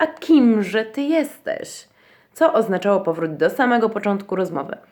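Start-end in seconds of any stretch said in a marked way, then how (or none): 0.0-1.9 scornful, contemptuous, very slow, pitched up. The caterpillar cries out in reply to Alice, contemptuous. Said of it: "zawołała pogardliwie gąsienica".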